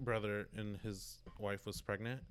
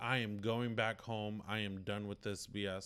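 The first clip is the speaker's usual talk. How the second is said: usual speaking voice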